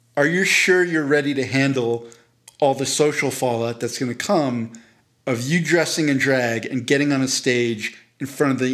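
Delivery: ordinary delivery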